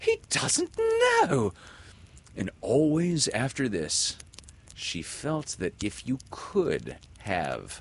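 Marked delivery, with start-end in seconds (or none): 0.0-1.5 very high, swooping, shocked and astonished outburst. Wendy reacts to Smee's question, with a shocked exclamation. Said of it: "she exclaimed".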